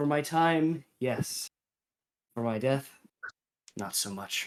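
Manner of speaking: soft, sighing delivery, words let out on sigh. Game master voices the defeated boss asked if they fought well, sighing. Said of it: "He he kind of he kind of sighs and says".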